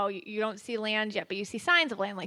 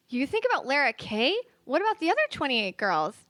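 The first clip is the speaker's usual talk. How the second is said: high-pitched character voice with big swooping pitch; 5 semitones higher than usual. Acting a scene in character, answering Alan's confession: playing Beth. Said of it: "I am Beth".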